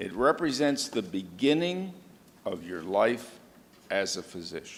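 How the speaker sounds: very slow, halting, pausing inside phrases. Speaker addressing an audience of new physicians, spoken very slowly. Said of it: "I want to say this very slowly".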